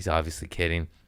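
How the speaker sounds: normal talking voice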